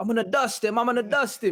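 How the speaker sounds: put-on English accent with very high pitch. Retelling a fighter's threat after the crowd incident: Leon Edwards English accent. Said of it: "in his English accent".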